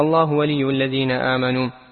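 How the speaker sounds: ordinary talk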